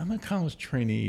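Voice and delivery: hushed, high-pitched stage half-whisper. Recalling a remark to somebody during management training, retelling a half-whisper. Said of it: "I sort of whispered to somebody".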